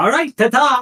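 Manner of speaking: very high, loud talking-wand character voice. Voicing a magic wand speaking inside a player's head: talking magic wand voice. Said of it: "I am your wonderful Wand of Wonder".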